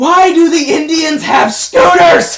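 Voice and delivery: shrill, very loud, high-pitched yell. The speaker turns their head away before asking about a scene: yelled question. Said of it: "I'm gonna yell this".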